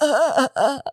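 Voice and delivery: dramatic croak, voice gone. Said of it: "dramatic interpretation of my".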